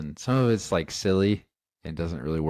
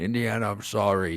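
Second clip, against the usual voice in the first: put-on Scottish film-star voice, higher pitch; 3 semitones higher than usual. Quoting the dad who shot the plane's tail: Sean Connery impression. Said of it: "that was a good Sean Connery impression".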